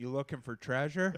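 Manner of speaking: mock shouted, high, loud yell. Retelling how a woman yelled from her car window: imitating a woman yelling. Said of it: "yelled out her window".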